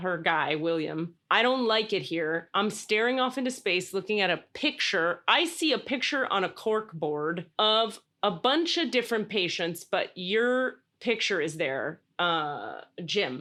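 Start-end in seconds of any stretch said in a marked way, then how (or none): none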